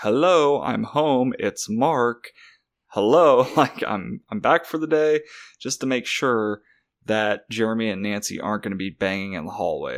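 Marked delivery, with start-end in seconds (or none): 0.0-5.2 put-on slow, very clear, carefully spelled-out announcer-like delivery. Retelling how a man coming home to the flat announces himself: very clear announcement. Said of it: "he's announcing himself very clearly".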